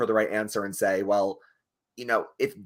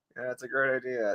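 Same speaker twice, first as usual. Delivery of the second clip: mock insincere agreeing tone, quieter; 6 dB quieter than usual. Imitating a player who hears an idea he dislikes: imitating Drew's unconvincing agreement. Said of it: "he can't fake".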